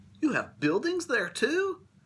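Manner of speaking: gasped, very high-pitched delivery. A listener replies to a tiny voice from a dust speck, gasping. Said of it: "Horton gasped".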